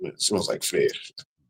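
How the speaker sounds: under-the-breath, hushed mumble, near whisper. Speaker retells what someone said, imitating a mumble. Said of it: "And he mumbles like".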